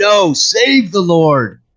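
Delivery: shouting in character voice. Running toward a character in the game and calling out to him: yelling in character. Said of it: "I'll yell to him".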